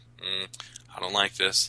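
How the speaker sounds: normal talking voice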